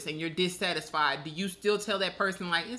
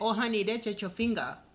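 put-on Vietnamese accent; 2 semitones higher than usual. Retelling what the nail shop worker said, imitating a Vietnamese accent. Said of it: "why did you just use that voice?".

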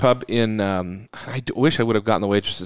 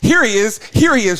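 shrill, very high shrieking scream; 13 semitones higher, 7 dB louder than usual. Retelling what a shop worker screamed in the shop: imitating someone screaming. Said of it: "screaming this in the shop".

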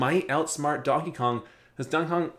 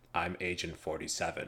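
flat monotone character voice; 9 semitones lower, 11 dB quieter than usual. Asking about a game character's voice, in a flat Agent 47 monotone. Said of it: "talks kind of like this, ... he sounds like very kind of like monotone-y".

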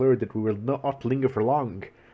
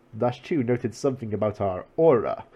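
plain

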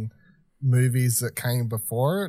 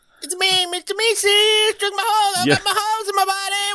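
very high, loud cartoon goo creature voice; 6 dB louder than usual. Speaker imitates the goo guy from Rick and Morty, doing his cartoon voice. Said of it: "Can't do that voice".

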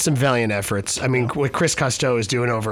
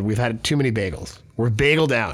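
ordinary delivery

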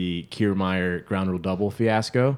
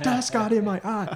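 play-acted very high scream, each word stretched; 13 semitones higher than usual. Retelling a clip where a player screams after missing a drill: imitating Ozzy Albies screaming. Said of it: "And he just keeps screaming".

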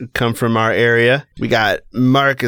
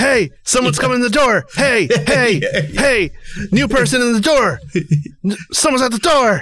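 shrill, very high, alarmed yelling dog voice; 12 semitones higher than usual. Playing a dog, yelling at the person coming into the house: yelling dog voice. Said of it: "Stop yelling at me".

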